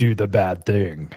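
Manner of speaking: dark, sinister, scary monster voice. Describing the voice first imagined, in a sinister monstrous voice. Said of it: "sinister, like you said, m- monstrous voice that's like".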